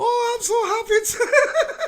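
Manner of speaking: squeaky voice, high, loud and slow. Retelling how an Olympic gold winner spoke when interviewed: imitating a Mickey Mouse-like high-pitched voice. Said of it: "she spoke like Mickey Mouse".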